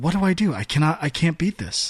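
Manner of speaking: ordinary delivery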